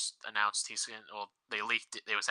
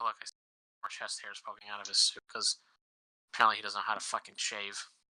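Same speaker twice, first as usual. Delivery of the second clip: ordinary talk, nothing marked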